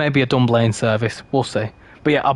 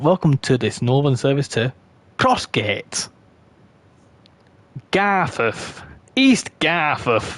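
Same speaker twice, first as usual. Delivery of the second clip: put-on very northern English accent, train announcer style. Describing the train line's new announcer, the speaker imitates his very northern accent. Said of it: "He's he's very northern".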